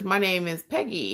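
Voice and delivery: ordinary talk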